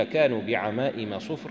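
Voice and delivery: ordinary talk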